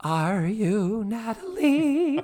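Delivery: very high, squeaky, off-target, subpar voice. Retelling a sitcom scene, quoting Missus Garrett: subpar Charlotte Rae impression. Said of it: "my Charlotte Rae is subpar today".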